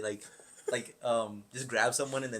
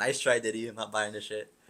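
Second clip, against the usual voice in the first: usual speaking voice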